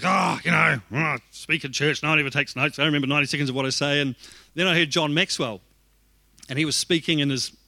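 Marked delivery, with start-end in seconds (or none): 0.0-4.0 put-on grumpy, complaining grumble. Retelling own past complaint about no one taking notes: imitating own grumpy complaining. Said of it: "I was getting grumpy one day".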